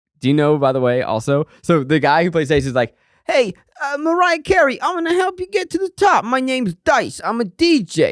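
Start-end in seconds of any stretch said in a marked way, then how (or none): 3.2-8.1 put-on New York accent, very high pitch. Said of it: "that was a pretty good New York accent".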